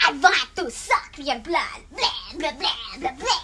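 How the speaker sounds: low, put-on classic movie-vampire voice. A ghost on its first day of haunting switches to a vampire voice. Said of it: "Why do you sound like a vampire right now?".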